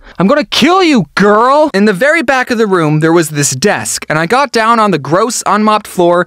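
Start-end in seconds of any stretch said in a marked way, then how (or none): 0.2-1.7 mock, totally earnest, dead-serious yelled scream. Retelling laser tag, where an almost adult man screamed across the arena: retelling a dead-serious scream. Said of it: "an almost adult man screams with 100% seriousness".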